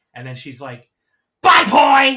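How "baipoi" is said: high-pitched, very loud shout, as angry as possible. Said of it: "as angry as possible".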